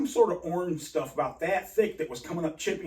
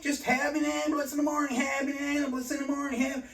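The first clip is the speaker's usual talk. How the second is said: mock panicked, high, frantic, repeated pleading scream; 8 semitones higher than usual. Retelling a demand for an ambulance all night: imitating own past screaming. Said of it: "I'm screaming all night".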